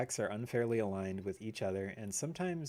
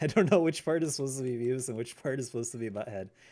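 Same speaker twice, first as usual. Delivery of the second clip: ordinary talk, nothing marked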